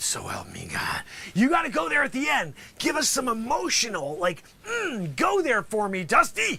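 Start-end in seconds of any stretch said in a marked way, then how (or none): 0.0-1.0 hushed, dropping to an almost whispered voice. Showing someone how to end a courtroom oath, dropping to a near whisper. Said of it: "you got to almost come down to a whisper".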